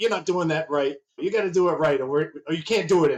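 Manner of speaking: mock very stern, strict, no-nonsense tone. Recalling how a family member criticized one's work, imitating a very stern voice. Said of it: "that very stern voice would come out".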